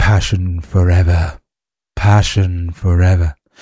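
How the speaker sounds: creepy late-night radio DJ voice, deep and loud. Improvising a character that came to mind: midnight dj voice. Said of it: "Get arrested for sounding like that".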